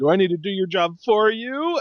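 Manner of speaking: mock haughty, condescending tone. Retelling a backstage interview, quoting Charlotte: condescending Charlotte impression. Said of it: "she gets all condescending with Renee".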